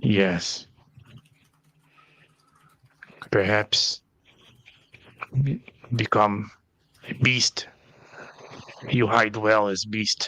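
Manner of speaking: low, hushed voice. In a tabletop game, a player speaks to Omelette in Goblin, in a low voice. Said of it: "on a low voice, now in Goblin".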